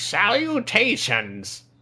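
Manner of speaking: very high, sing-song, swooping villain voice. Retelling a car commercial where Skeletor speaks: Skeletor voice. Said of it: "he's like".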